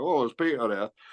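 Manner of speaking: put-on thick northern English accent. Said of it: "he talked like that".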